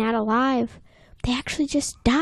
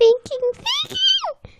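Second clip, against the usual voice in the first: super high-pitched voice shooting up and swooping. Retelling the scene where SpongeBob's house is sinking: high-pitched SpongeBob voice. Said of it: "Goes super high-pitched".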